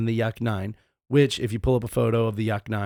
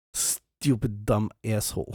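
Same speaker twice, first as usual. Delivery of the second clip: put-on, fake Russian accent; 5 dB quieter than usual. Repeating an insult after being asked: put-on Russian accent. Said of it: "please do it in a Russian accent".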